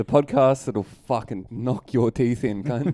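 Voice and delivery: put-on, fake aggressive tough-talking delivery. Introducing the podcast to listeners with a joke tagline, mock aggressive. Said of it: "you're fucking aggro, mate".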